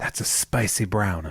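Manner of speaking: put-on whisper. Retelling what two visitors said to a security guard: imitating a whisper. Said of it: "They whispered".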